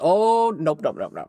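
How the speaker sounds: offended, indignant put-on cat voice. Retelling how the cat reacts to picked-up keys, voicing the indignant cat.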